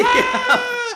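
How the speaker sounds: very loud, very high bloody-murder shriek. Recounting opening the armoire on a bitten guy, retelling his bloody-murder scream. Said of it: "he screams bloody murder".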